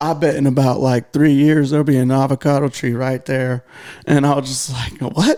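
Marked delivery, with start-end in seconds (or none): 0.0-3.7 country hillbilly manner of talking. Retelling a story about a man showing them around: imitating him in a hillbilly voice. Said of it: "You're making him sound like a hillbilly".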